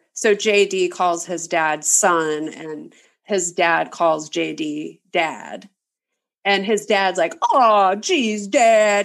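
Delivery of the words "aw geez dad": put-on creepy, sarcastic fifties sitcom kid voice. Retelling how a movie character talks to his son: imitating JD's dad's sarcastic sitcom kid voice. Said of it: "really sarcastic, like, nineteen fifties sitcom kid voice".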